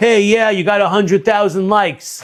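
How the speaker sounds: put-on thick Brooklyn accent. Speaking to Mikey, imagining how he would talk: thick Brooklyn accent. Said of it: "like a thick Brooklyn accent?".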